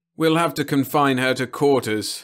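weary, worn-out voice, pitched a little high. Reading a story aloud, voicing a character's reply: weary. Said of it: "Max said wearily".

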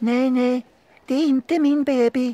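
very high, very loud, shrill, terrified shriek. A lost pacifier, seeing the excited baby, shrieks in fright. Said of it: "skrek nappen förskräckt".

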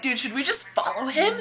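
put-on, soft, only half-serious sarcastic tone. Retelling what they said to an overzealous fan while weaving between cars, retelling half-joking sarcasm. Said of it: "being sarcastic".

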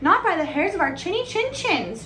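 shouted, very high-pitched. Narrator reading a story, the pigs answering the wolf at the door, shouted. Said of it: "shouted the pigs".

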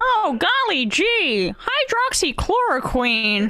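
very high pitch, slow and swooping. Imagining Big Bird promoting a drug: Big Bird voice. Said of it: "would he be happy if Big Bird was".

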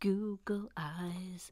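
whispered, slow.

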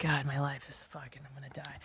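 put-on, very hushed, hopeless, defeated despair. Retelling own reaction when the kids scream: imitating own despair. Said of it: "I go into, like, despair".

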